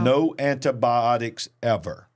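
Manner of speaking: ordinary talk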